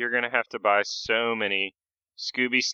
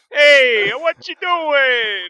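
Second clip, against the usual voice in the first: put-on Italian mobster voice, much higher pitch; 9 dB louder than usual. Choosing shouts over whisper, then doing an italian mobster impression. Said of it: "impersonate an Italian mobster".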